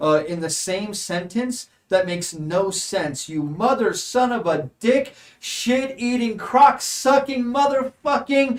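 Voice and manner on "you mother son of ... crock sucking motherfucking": high, shrieking, top-of-the-lungs ranting. Voicing Risa as she swims toward the walkway; Risa screaming curses. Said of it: "as Risa is screaming at the top of her lungs".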